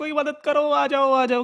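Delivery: high, loud yelling cry.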